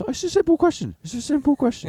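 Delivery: very high, badgering, insistent repetition.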